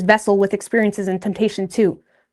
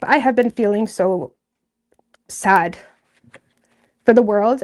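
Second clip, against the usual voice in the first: voice on the verge of crying. A speaker who has felt emotional lately keeps talking to listeners, holding back tears. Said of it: "I'm not going to cry".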